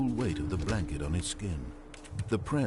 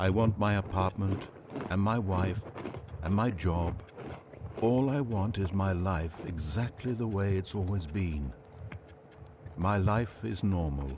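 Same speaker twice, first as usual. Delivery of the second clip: usual speaking voice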